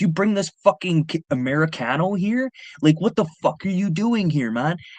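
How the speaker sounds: high-pitched, freaking-out, frantic rant. Retelling a man freaking out at a bodyguard, imitating someone freaking out. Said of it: "He starts freaking out on the bodyguard".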